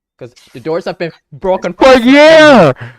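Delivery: very loud, rising, playful joking outrage. Complaining about broken teleport doors: playful mock anger.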